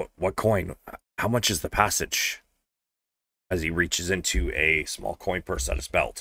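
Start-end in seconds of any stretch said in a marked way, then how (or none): 0.0-2.4 quiet whisper. Voicing the captain of the City Watch, asking about passage: whispering. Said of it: "whispers to Ray".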